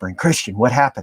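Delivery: hushed stage whisper. Retelling inmates at their cell windows asking what happened: imitating inmates half-whispering. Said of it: "they're whispering".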